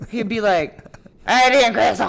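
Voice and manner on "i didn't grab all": put-on very loud, pure, heavy Cajun accent. Describing a man who spoke pure Cajun, the speaker quotes him: Cajun accent impression. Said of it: "He was like pure Cajun".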